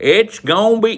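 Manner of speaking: full-on shout, very loud and high-pitched. Speaker acts out a director coaching an actor through takes, retelling a yelled take. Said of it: "don't yell".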